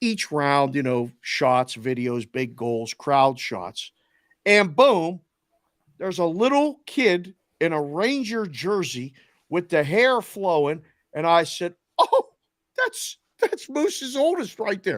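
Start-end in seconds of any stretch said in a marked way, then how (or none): 12.0-15.0 very high, sing-song, swooping yell. Retelling reacting to a post game show on TV: imitating own yelling. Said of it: "why are you yelling at the T V?".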